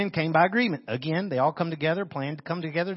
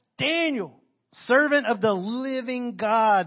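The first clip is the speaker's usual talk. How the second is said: play-acted high, drawn-out anguished yell; 5 semitones higher than usual. Retelling a man yelling through the stone to Daniel, an acted-out anguished yell. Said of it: "lays up against it and yells".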